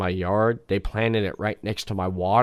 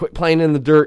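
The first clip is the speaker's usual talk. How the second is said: very loud, high, mean scolding yell; 7 semitones higher, 9 dB louder than usual. Retelling yelling at a daughter playing in the dirt: imitating own yelling. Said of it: "I'm yelling at my daughter".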